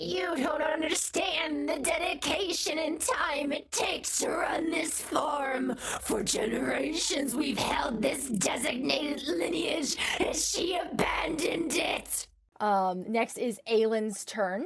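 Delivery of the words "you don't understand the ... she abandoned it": hissing, high and warped. Game master voices Grandma Thistle waking atop the corpse flower: Grandma Thistle's warped hiss. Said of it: "with a sickeningly warped voice, she hisses".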